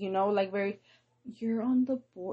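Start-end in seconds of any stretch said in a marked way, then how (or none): 1.2-2.3 mock worried doctor voice, higher. Retelling how doctors talk about the kids' weight: imitating a doctor's concerned tone. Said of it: "very concerned, very worried".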